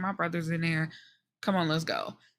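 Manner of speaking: soft, put-on sulky, put-out tone with attitude. Retelling a character's reply when questioned: imitating someone with a little attitude. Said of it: "you can tell he got a little attitude".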